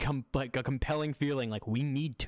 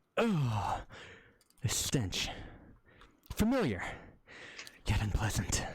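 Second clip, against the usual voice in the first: disgusted character voice, thick with disgust; 3 semitones lower than usual. Voicing a player's character reacting to a bad smell: voicing Torment disgusted. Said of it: "Torment, you're like".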